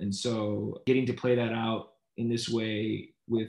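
plain

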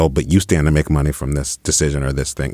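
plain

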